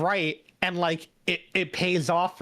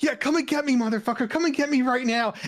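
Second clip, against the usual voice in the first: high-pitched, fierce, aggressive, challenging shout; 6 semitones higher than usual. Recounting a favorite bit from an episode, the speaker retells Ron's aggressive shout at a threatening caller. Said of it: "Ron's just like".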